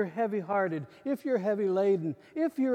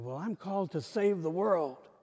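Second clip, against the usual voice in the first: play-acted smug, puffed-up, self-important, arrogant tone; 4 semitones lower than usual. Retelling one's own past reply to an old pastor: retelling arrogant past words. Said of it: "with all the arrogance I could muster up".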